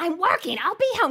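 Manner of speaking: put-on yelled reply. Retelling how he picked up a phone call and yelled; retelling him yelling. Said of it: "picked up her phone call and was yelling".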